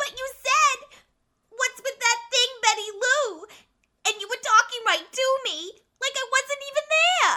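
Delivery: very high, tearful, crying, hurt-sounding voice. In a scene, a character just asked why she is crying answers, crying, hurt. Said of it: "why are you crying?".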